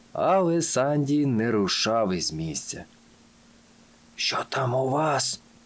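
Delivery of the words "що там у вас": reverent whisper, higher pitch. Sandy, not moving while Timmy calls him over, speaks in a reverent whisper. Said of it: "побожно прошепотів він".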